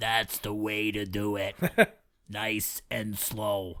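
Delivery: deep, very slow voice, every word dragged. Retrying the line after being told it sounds like Bob Hoskins as Mario. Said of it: "I can do better than that".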